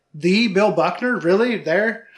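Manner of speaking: ordinary talk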